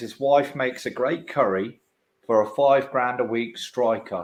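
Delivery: ordinary talk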